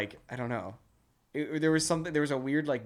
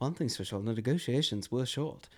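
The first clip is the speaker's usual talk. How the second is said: put-on Scottish or British accent, faster pace. Show how the actor says his line in the film, Ewan McGregor impression, Scottish or British accent. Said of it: "I'm just doing a Scottish or a, a British accent".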